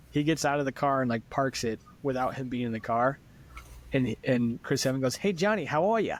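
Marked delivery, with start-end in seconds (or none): 5.1-6.1 put-on thick, heavy Boston accent, pitched up. Retelling a car commercial, Chris Evans greeting John Krasinski, Chris Evans thick Boston accent. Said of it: "doing like the thickest Boston accents".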